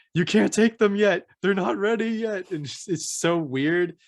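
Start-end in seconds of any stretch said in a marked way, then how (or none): 0.2-2.5 frantic, high-pitched, yelled scream. Describing a show where a man tending baby goats screams at others, imitating his screaming. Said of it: "he's just like screaming at them like".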